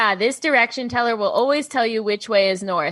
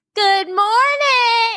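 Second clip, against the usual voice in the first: mock grating screech, very high, loud and annoying; 12 semitones higher, 4 dB louder than usual. Retelling greeting the whole meeting circle at the end: annoying high scream. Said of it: "in like a really like annoying high voice".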